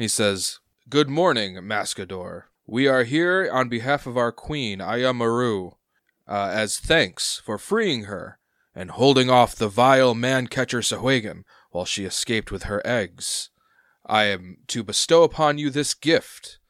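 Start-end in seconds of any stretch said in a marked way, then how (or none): 0.9-16.5 gurgling sea-creature voice. Narrating a story, voicing an envoy speaking for his queen, in a gurgling voice. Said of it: "He kind of has like a gurgle to his voice".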